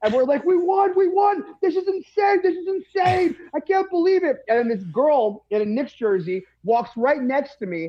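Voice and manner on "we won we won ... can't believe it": mock overjoyed, disbelieving, high, excited outburst. Retelling celebrating a win in a bodega: retelling freaking out excitedly. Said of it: "me and the bodega guy start freaking out".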